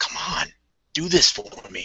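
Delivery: soft, hushed whisper. Voicing a character pressed against a crate, talking to his gun: whispering to a gun. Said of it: "whispers to it".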